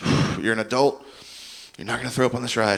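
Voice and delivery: breathy, encouraging tone with deep breathing.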